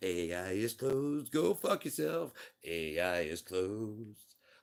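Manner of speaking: loud recorded answering-machine message voice. Joking that an AI refuses requests, as if playing back a message: answering machine voice. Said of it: "that's my answer machine".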